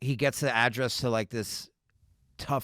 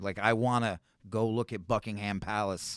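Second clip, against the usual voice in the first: plain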